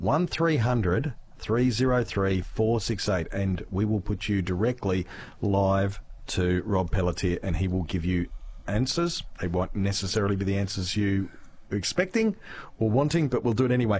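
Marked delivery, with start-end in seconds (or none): 0.0-3.3 slow, deliberate, much slower. Repeating the phone number for callers, saying the number slowly. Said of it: "I'll say that slowly".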